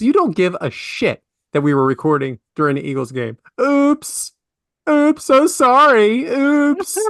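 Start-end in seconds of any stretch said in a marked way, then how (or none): 3.6-7.0 very high, drawn-out, obnoxious, snooty oops. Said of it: "Just obnoxious way of saying".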